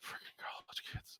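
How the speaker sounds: muttered under the breath. Voicing a character who turns away from the players: muttering under his breath. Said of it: "you kinda hear under his breath".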